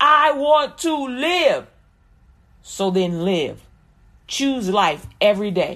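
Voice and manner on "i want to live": emphatic, loud, slow, louder each time. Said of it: "Say it louder".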